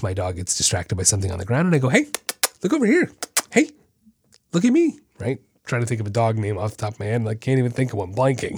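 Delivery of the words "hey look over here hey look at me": bright, excitable, very high-pitched happy voice. Calling a distracted dog back to attention, showing how a happier tone sounds, in a happy excited tone. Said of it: "you hear my tone. It's a lot happier and excitable".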